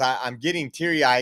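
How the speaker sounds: ordinary delivery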